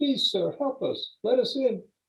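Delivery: put-on pitiful, very high, childlike little-girl voice. Running up to a window and begging to be let in, in a pitiful childish girl voice. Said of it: "in her most pitiful female childish voice".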